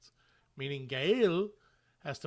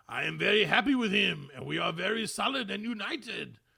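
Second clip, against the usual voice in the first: clumsy, badly done put-on French accent; 4 semitones higher, 4 dB louder than usual. Quoting a model maker based in Bordeaux, in a bad French accent as [name]. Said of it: "I had to try and do a French accent".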